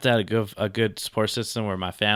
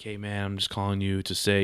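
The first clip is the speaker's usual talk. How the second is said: imitated deep male voice; 4 dB quieter than usual. Retelling a call from an unknown man, the speaker imitates the caller's deep male voice. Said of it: "He had a really deep voice".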